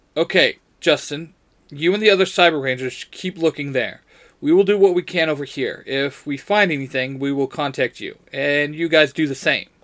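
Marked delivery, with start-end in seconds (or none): none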